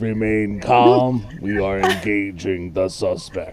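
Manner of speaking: rough, gritty, rocky, stony voice. Voicing unseen guards over a crowd: gritty, stony, rocky voices. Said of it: "gritty, uh, stony, rocky voices saying".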